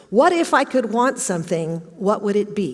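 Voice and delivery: ordinary talk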